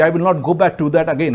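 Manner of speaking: ordinary talk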